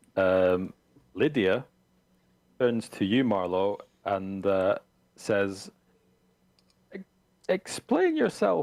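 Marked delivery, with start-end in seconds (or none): 7.0-8.6 very high, quavering, trembling, insistent voice. Voicing Lydia after a riot, turning to Marlowe: trembling voice. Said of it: "with a trembling voice".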